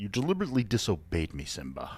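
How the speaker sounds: swooping voice with wide pitch swings, regal father figure. Pitching a joke where Darth Vader quotes The Lion King: Mufasa voice. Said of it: "as in, uh, Mufasa?".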